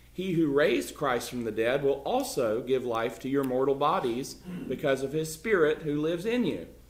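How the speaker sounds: plain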